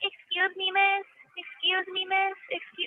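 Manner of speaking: shrill, very slow, very high, drawn-out, grating, annoying voice. Complaining about the new person in the next room, imitating an annoying voice. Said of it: "like that annoying ass voice".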